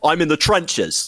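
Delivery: put-on high, weird accent flipping between American and British. Mocking a public figure's daily routine: imitating his weird accent. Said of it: "I can't do his voice".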